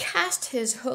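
ordinary delivery

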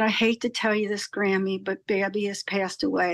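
ordinary delivery

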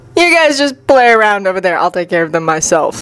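ordinary delivery

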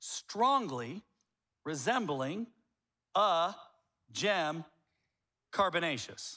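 very slow, halting, broken up mid-phrase. Demonstrating obscure words to an audience, said slower. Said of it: "I'll even say it slower".

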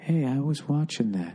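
put-on meek, powerless, complaining voice. Retelling a prison TV room moment: imitating a meek man, powerless. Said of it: "Like, powerlessly".

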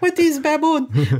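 put-on very high-pitched old woman voice with Cuban accent. Retelling something their mother said, the speaker mimics her: old cuban mother impression. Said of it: "my mother impersonation there, the old Cuban".

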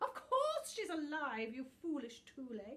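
very loud, shrill, snapped. The talking book answers an eager question, snapping. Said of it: "snapped Book".

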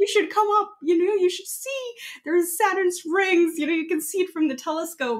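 put-on thrilled, eager, high-pitched voice. Speaker recalls setting up a telescope and calling to mom downstairs, retelling an excited scream. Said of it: "I was screaming".

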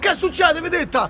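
calling out loudly.

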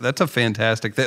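ordinary delivery

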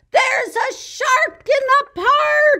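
shrill, very loud, very high-pitched cry. Narrator reading Timothy, looking through his telescope, crying out in his loudest voice. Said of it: "In his loudest voice".

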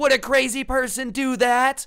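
loud, frantic, lost-it yell.

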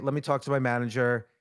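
ordinary delivery

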